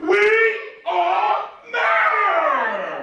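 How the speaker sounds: very high, loud, big shout with "matter" drawn out. Showing children how to call out at someone littering: loud big voice. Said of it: "I could not hear you".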